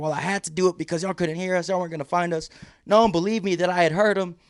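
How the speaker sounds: mock heated screaming, high-pitched, like a shouting match. Retelling a rescue, imitating a friend screaming back at rangers: retelling Steven screaming back. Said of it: "Steven's screaming back".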